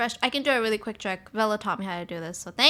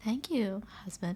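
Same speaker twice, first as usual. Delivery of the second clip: nice, soft, put-on sweet little voice; 8 dB quieter than usual. Thanking a husband, shown in the nice little voice. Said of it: "I can do the nice little voice if you like".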